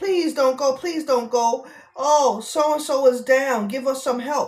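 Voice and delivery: imitated screaming voice. Imitating people who beg the listener to stay: imitating people screaming. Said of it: "They screaming".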